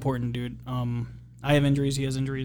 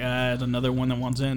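ordinary talk

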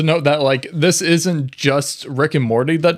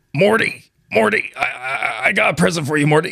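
put-on cartoon grandpa character voice. Auditioning for the others as Rick Sanchez: Rick Sanchez voice. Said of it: "audition pitch to be, uh, frickin' Rick Sanchez".

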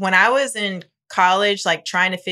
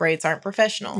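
plain

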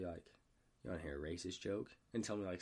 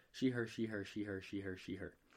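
normal talking voice

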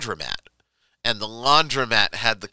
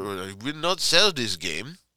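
put-on Russian accent character voice. Retelling a laundromat owner refusing to sell, on purpose: imitating a russian accent. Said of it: "I'm gonna make him Russian".

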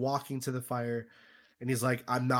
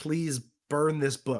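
earnest, desperate pleading; 3 semitones higher than usual. Retelling a film scene, a wife begging her husband: imitating someone pleading. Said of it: "pleading with her husband".

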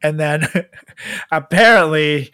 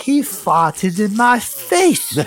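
very slow, drawn-out put-on British accent; 6 semitones higher than usual. Quoting a woman's remark about a former governor, in a put-on british accent. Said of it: "Is it funny when you do the accent?".

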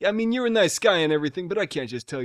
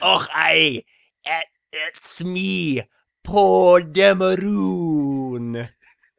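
put-on Scottish accent, louder; 5 dB louder than usual. Acting out a scene as Poe Dameron: bad Scottish accent as Poe Dameron. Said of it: "I can't do a Scottish accent".

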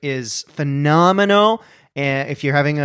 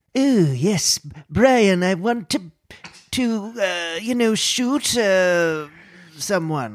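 put-on high-pitched, pitched-up cartoon baby voice; 5 semitones higher than usual. Speaker says they can do a Stewie, then performs it: Stewie impression. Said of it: "i think i can do a stewie".

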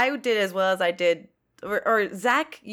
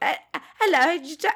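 put-on high British accent, much higher; 9 semitones higher than usual. Explaining a voice meant for the Pigeon Sisters, the speaker does a high British Pigeon Sisters voice. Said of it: "it was supposed to be high British".

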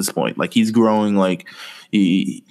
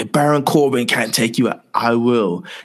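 put-on spoken in a Scottish accent; 2 semitones higher than usual. Speaker retells McIntyre pushing up on Angle, in McIntyre's Scottish accent. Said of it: "in the Scottish accent".

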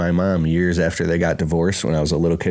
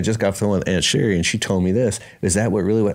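ordinary talk

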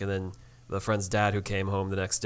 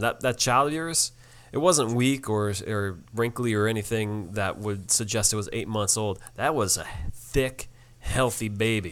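ordinary talk, nothing marked

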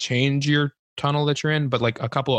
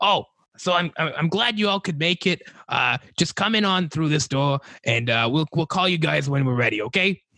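little goblin voice, higher; 2 semitones higher than usual. Game master voicing a little goblin greeting the arriving party, in a goblin voice. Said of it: "the little goblin like looks at all of you and is like".

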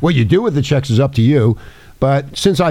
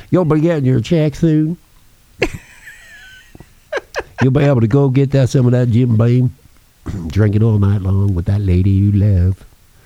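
put-on hillbilly accent in announcer style. Joking about announcing the payments for the government: put-on hillbilly voice. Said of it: "I could do my hillbilly thing".

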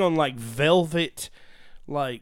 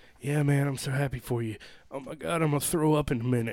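put-on stoner voice, spoken quieter; 4 dB quieter than usual. Retelling how Dustin answered while very drunk: Dustin's stoner voice. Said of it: "shakes his head with his eyes closed like a stoner".

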